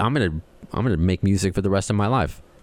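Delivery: plain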